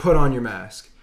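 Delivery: loud, curt, blunt, rude tone. Retelling what a worker at the door said: imitating a rude order. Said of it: "It was".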